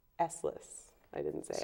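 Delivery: hushed, soft whisper. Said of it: "you sort of whispered it".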